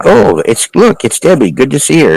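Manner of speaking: mock happy, exuberant female voice, high and swooping. Imitating a clear female voice heard on a recording: imitating a happy female voice. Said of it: "That's a great impersonation of it".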